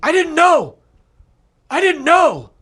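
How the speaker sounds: high-pitched screaming. Retelling a man fleeing on a quad: imitating someone screaming. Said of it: "he's screaming".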